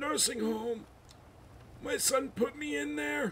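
muddled, confused, disoriented character voice.

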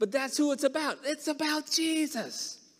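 little, squeaky voice. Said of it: "in a little squeaky voice".

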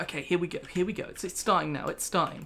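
ordinary delivery

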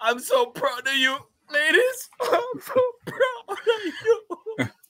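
very high, choked-up voice, audibly near tears. Broadcaster celebrating a jamaican sweep addresses the winning runners, on the verge of tears. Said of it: "I know you're not going to cry".

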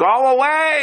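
acted, high scream with "away" stretched long. Recounting trying to shear leaves while a man interrupts, acting out screaming at him. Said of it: "I'm screaming at him".

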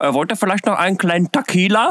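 Indian accent, high pitch.

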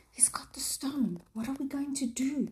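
secretive, hushed whisper, pitched high. One of the boys whispers to another boy in a story, whispered. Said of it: "Sam whispered to Peter".

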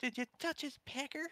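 put-on very high, sweet, kindly little old lady voice. Retelling what Mallory said, imitating Mallory's sweet old-lady voice. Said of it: "And that sweet old lady voice".

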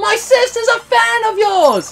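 very loud, very high, drawn-out shout. Retelling calling up to a performer above the crowd: imitating shouting up at someone. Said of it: "shouting at each other".

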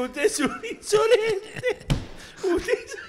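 high, slow, indignant mock old-man voice. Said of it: "Se paró un viejo arruinado con un tapado".

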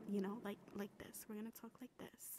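calm, settled-down, very soft, near-whispered voice. Telling themselves to calm down and showing how to talk: calmed-down voice. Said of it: "We're gonna calm down and we're going to talk like this".

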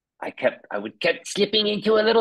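put-on high-pitched little-kid voice.

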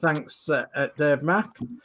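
normal talking voice

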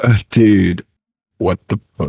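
sounds like a demon. Testing whether the voice sounds different to the other speaker: sounds like a demon. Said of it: "You sound like a demon".

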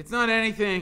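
high-pitched mutter. Stanley answers mr. sir, who stands over him, muttered. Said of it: "Stanley muttered".

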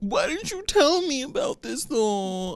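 whiny put-on voice, high.

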